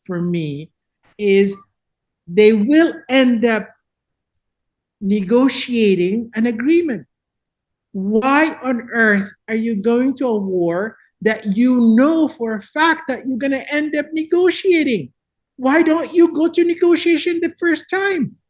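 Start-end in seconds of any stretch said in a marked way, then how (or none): 1.2-18.3 raised, rising, exasperated voice. Speaking to an audience about war and negotiation, with a raised voice. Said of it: "I'm sorry to raise my voice".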